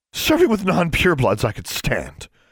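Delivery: angry outburst, very high, swooping. Adela, rising to her feet after the teacher's rebuke, answers Shurtleff; angry. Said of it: "angrily rising to her feet".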